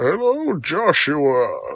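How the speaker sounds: loud, swooping, big put-on voice. Playing along with a joke about a Bane impersonation: Bane impression. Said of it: "doing her best Bane impersonation".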